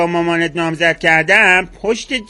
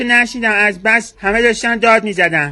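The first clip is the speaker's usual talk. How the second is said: ordinary delivery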